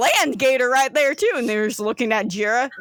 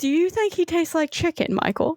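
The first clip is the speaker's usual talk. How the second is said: put-on British accent with a higher pitch; 5 semitones higher than usual. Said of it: "I have to go back to British".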